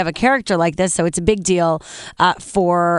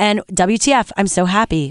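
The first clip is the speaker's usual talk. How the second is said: plain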